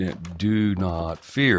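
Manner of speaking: stretched, elongated words. Trying to copy how a quoted line was delivered, drawn-out and elongated. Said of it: "and I still can't do it right".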